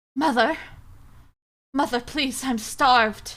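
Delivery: clumsy, bad put-on British accent. Retelling pleading to Mother, in a put-on British accent. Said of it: "pretend I'm speaking in a British accent".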